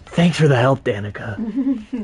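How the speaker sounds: breathy, airy superhero voice with lots of air. Showing how an actor voiced the hero, breathy Spider-Man voice. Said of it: "All breathy".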